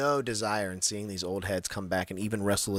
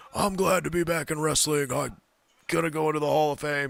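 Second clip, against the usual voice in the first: put-on breathless voice, higher pitch; 7 semitones higher, 4 dB louder than usual. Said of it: "He was, like, winded".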